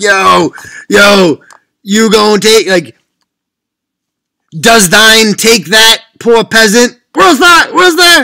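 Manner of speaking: put-on loud, drawn-out, drunken hype hollering. Imitating Sam Adams getting people fired up: Sam Adams as a yelling hype man. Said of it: "he was literally the guy like".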